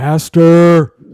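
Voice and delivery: booming, loud, high giant's bellow. Game master voices a giant twin spotting the players, bellowing out real loud. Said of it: "he just bellows out real loud".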